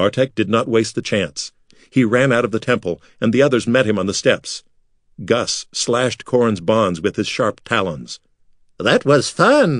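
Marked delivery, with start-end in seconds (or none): 8.8-9.8 high voice, said through giggles. Narrator reading Murad's line after the escape from the temple, giggling. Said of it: "Murad giggled".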